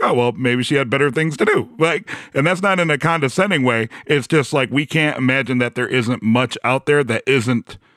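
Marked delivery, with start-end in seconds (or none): none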